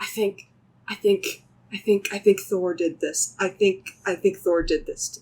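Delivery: stage whisper, stammering, stumbling and repeating words. A player voices a character talking to himself, in a stage whisper. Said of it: "I'll stage whisper".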